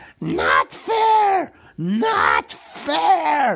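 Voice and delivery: very high, swooping hiss, "fair" drawn out. Narrator reads a creature's upset reply to a riddle, Gollum hissing. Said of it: "he hissed".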